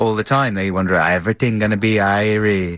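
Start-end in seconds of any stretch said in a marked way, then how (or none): 1.0-2.8 mock Jamaican accent, lower pitched. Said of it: "that's what they talk like, the Jamaicans".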